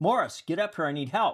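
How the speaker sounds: very high voice of full commanding authority. Speaker demonstrates calling someone forward for help, in a commanding voice. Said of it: "if I say that with command authority".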